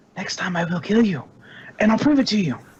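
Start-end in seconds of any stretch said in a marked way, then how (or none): 0.2-1.3 hushed whisper. Player's character pulls one close and speaks to them: whispering. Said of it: "and I whisper".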